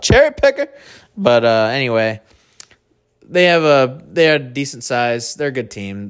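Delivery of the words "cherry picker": high-pitched, loud heckling yell. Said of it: "And I yelled out".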